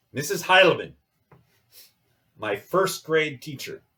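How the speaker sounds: really bad, high-pitched put-on German dialect. Speaking to your class, you name your first grade teacher in a really bad German accent. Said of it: "said that with a really bad German dialect".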